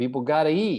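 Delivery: slight New York accent.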